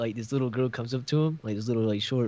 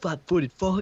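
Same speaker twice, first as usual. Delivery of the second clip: put-on yelling, higher pitch; 7 semitones higher than usual. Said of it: "yelling at Hayden".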